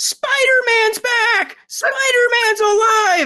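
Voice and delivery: play-acted shrill, very high, excited child scream. Retelling how a little kid in the front row reacted when Spider-Man popped back on screen, imitating a kid screaming excitedly. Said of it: "just started screaming".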